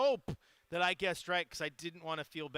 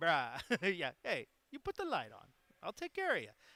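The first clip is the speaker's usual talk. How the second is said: laid-on, sing-song put-on Hawaiian pidgin accent. Retelling a family exchange with grandpa about putting the light on, in a Hawaiian accent. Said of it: "Sometimes the Hawaiian accent is a thing".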